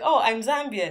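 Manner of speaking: ordinary delivery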